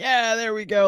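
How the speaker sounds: put-on sarcastic shouted cheer, high. Retelling what Jared Allen screamed after his team scored against: imitating Jared Allen's sarcastic scream. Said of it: "just screamed like".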